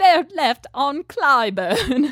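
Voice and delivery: put-on British butler accent. Mocking how the home's british butler says chicago street names, british butler accent. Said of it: "how the British butler tries to say Chicago street names".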